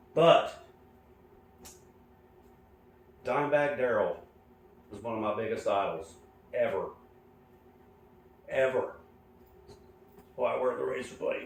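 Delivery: choked-up voice, on the verge of crying. Explaining why you wear the razor blade for your idol: about to cry. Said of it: "I'm gonna cry. Sorry".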